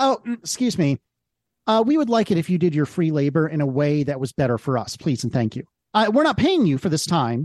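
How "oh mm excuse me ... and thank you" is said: usual speaking voice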